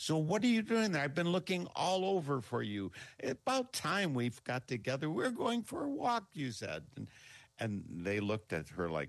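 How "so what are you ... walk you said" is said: mock very high hollering, pitch swinging wide. Retelling how a woman yelled into a garbage can, imitating a woman yelling. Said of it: "she yells in".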